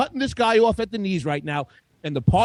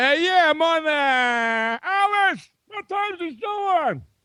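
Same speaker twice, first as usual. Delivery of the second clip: mock unsure, unconvinced delivery, higher pitch; 8 semitones higher than usual. Mocking how another speaker announced his show time: imitating someone saying it without conviction. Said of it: "say it with conviction next time".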